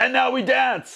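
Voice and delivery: high, slow, excited exuberant yell.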